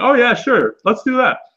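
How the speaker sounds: high, chirpy, mock-cheerful tone. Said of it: "they would be like".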